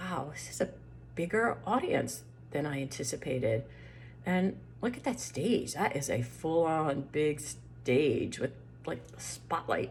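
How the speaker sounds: soft, hushed, anxious, worried voice.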